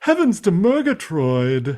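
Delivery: high cartoon cat voice. Showing another speaker how the pink cat talks: Snagglepuss voice. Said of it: "he talks like this".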